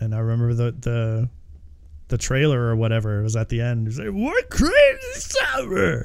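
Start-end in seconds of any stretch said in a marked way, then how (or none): 4.1-6.0 very high, swooping squeal. Recalling a movie trailer's closing line: Bobcat Goldthwait voice. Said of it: "That's not a bad Bobcat".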